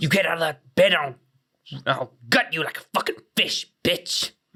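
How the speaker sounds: menacing, scary horror-killer voice. Speaker imagines tucking a kid into bed, in the Ghostface voice. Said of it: "voice of Ghostface".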